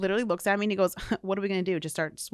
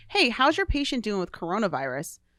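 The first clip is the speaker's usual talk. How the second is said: put-on nonchalant, casual tone; 3 dB louder than usual. Retelling a supervisor's evening phone call: imitating a nonchalant tone. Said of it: "she calls me up nonchalantly".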